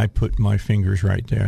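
ordinary delivery

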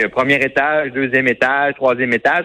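slightly nasal put-on voice, pushed through the nose. Announcing building floors in a prank recording, in a Jean Charest nasal voice. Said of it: "un peu avec la voix nasillarde de Jean Charest".

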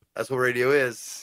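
ordinary talk

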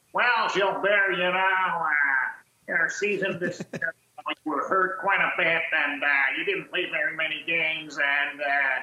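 small, grating little voice. Act out Jimmy Devellano talking to Gilbert at an exit meeting, in his annoying little voice. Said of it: "avec sa petite voix là, gossante".

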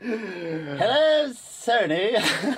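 very high, cartoonish critter voice. Pretending to contact Sony, the speaker greets them in Crash Bandicoot voice. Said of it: "That's my best imitation of Crash Bandicoot".

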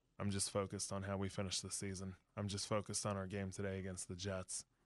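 soft, flat, level, droning monotone. Retell how he answered many questions about being back with New England, imitating his monotone voice. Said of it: "in that monotone voice of his".

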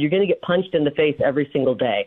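normal talking voice

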